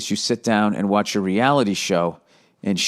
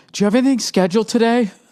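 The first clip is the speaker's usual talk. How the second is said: put-on panicked voice, higher pitched; 13 semitones higher, 4 dB louder than usual. Retelling how a wife asks in the morning: imitating a panicked wife. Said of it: "that panic your wife can have in her voice".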